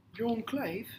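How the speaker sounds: British accent. Saying the company name again when asked, in a british accent. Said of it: "Can you say it in British tone?".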